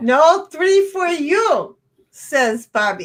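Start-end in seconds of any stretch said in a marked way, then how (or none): 0.0-1.8 fake, put-on Indian accent. Quoting Bobby during a Yahtzee game, put-on Indian accent. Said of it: "that's my best Indian accent ever".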